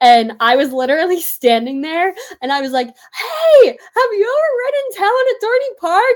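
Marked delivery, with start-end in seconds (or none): 2.9-6.2 play-acted shrill scream at very high pitch. Retelling calling a question to people below at the park: imitating own screaming. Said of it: "screaming it to all the people".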